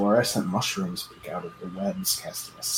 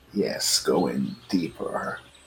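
low, dark, ominous, foreboding voice; 6 semitones lower than usual. As the players move further in, a mysterious voice urges them deeper, in an ominous voice. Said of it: "I just heard an ominous voice".

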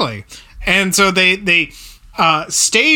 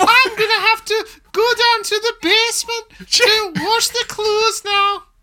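every R rolled like a Scot. Recounting a Frasier scene, doing Daphne voice with rolled R's. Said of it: "making her roll her R's like a Scotsman".

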